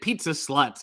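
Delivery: ordinary talk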